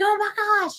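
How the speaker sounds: put-on very high, shrieking, screaming cry. Retelling how a niece reacted when a donkey grabbed her bucket: imitating someone screaming. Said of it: "and she's screaming".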